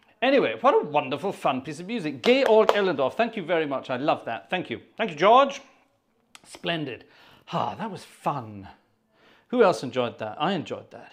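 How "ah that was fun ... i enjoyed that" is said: winded, breathless, out-of-breath talk. After playing a piece jumping between organ manuals, speaker is out of breath. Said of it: "I'm out of breath now".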